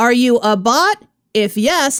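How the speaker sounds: automated, computerized robot voice. Retelling a phone call from an automated caller, a computerized voice. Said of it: "a computerized voice comes in and says".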